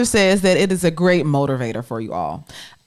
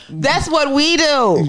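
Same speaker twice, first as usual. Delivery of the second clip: loud raised voice, higher pitch; 8 semitones higher than usual. Interrupting the other speaker during a household argument: yelling. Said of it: "Sorry for yelling".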